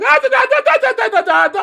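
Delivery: mock chatter, high, loud, rattled-off gibberish.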